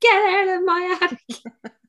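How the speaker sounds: crazed, frantic shriek, very high and loud. Retelling punching the attic wall at a scraping noise, reenacting a frantic yell. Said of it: "So like a crazy woman, I'm like punching the wall".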